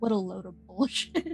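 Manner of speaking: low, grumbled, under-the-breath mutter. Voicing a character who looks at the group: muttering under breath. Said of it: "kind of mutter under their breath".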